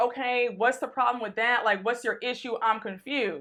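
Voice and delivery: normal talking voice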